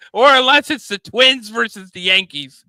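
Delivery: very loud, very high-pitched yelling. Talking about playoff baseball on TBS: yelling. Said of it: "I'm yelling again".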